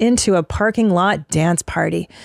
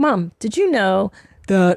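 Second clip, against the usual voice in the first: slow, drawn-out, put-on young child's voice. Retelling a child telling his mom what he learned at school; imitating a kid's voice. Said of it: "I'm doing the wrong kid's voice".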